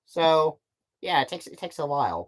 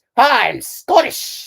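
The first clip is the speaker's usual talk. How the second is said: very shrill, very high, very loud cartoon old-man voice; 9 semitones higher, 9 dB louder than usual. Showing the voice used for the old council member: Scrooge McDuck voice. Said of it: "a Scrooge McDuck voice".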